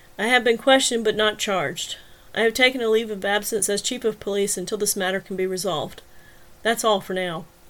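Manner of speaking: ordinary delivery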